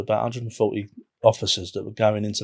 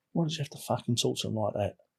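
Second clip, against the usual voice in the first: soft, hushed half-whisper; 8 dB quieter than usual. Retelling what the ds said to them afterwards: imitating someone half-whispering. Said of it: "he whispered to me".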